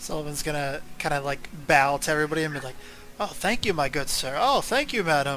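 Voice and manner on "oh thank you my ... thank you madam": sarcastic put-on voice, slower. A game master voicing Sullivan bowing to everybody as the party walks through, sarcastic Sullivan voice. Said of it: "sarcastically bowing to people".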